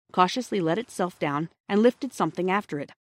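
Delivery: ordinary delivery, nothing marked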